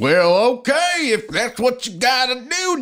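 put-on cowboy voice. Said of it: "I sound like a cowboy".

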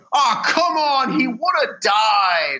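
mock very slow high yell, died stretched out. Retelling how a moviegoer called out during a scene: imitating someone yelling. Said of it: "yelled out".

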